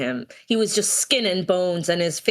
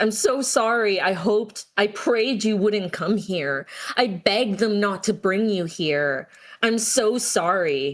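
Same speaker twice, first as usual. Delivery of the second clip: mock sobbing, put-on crying voice. Retelling a book scene where a father sobs an apology: retelling a character sobbing. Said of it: "crying and, like, sobbing".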